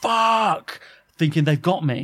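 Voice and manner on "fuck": high, panicked exclamation. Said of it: "I would've gone".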